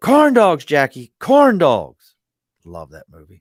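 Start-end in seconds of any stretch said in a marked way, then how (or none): 0.0-2.2 very loud, wailing, drawn-out swooping scream. Retelling a favorite movie scene: imitating someone screaming. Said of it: "the guy's sitting there screaming".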